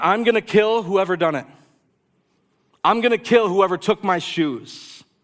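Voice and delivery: menacing, threatening screamed shout. Telling a story, acting out a man left standing, imitating someone screaming. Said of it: "And he's screaming".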